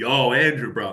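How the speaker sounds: put-on New York Long Island accent. Retelling what a loan officer said: exaggerated Long Island accent. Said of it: "he didn't have a Long Island accent like that".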